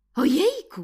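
high, loud, joyful, astonished exclamation. A giraffe tries on glasses and looks at posters: delighted, surprised shout. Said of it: "Krzyknęła żyrafa uradowana i zdziwiona zarazem".

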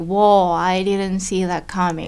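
ordinary talk, nothing marked

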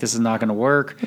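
ordinary talk

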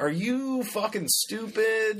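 smug, sarcastic, sneering, drawn-out delivery.

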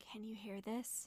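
barely audible, faintest possible half-whisper. Testing whether another character can hear: half-whispering as quietly as possible. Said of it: "I'm gonna whisper as quietly as I can".

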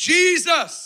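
very high, full-power, all-out scream. Retelling the moment he screamed with all the power inside him, retelling a scream. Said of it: "I just screamed".

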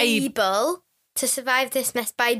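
normal talking voice

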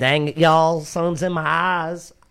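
slow, mocking, joking put-on Southern drawl. Imitating the woman in the video who blames the sun: mocking southern accent. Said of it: "The Southern accent is coming out".

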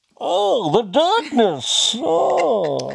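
very high, very loud, rough villain voice, stretched oh. Trying out a voice while friends chat about impressions, Bane voice. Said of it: "The Bane voice".

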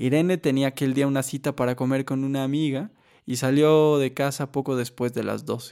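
plain

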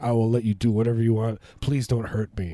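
frightened, terrified, begging plea. Acting out a scared reply to the tough guy: imitating a terrified plea. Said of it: "And you'd be terrified".

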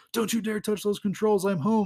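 put-on hurried, high, rushed yell. Retelling a comic scene where one character yells up to another, retelling a yell. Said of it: "And Kurt's yelling up to her like".

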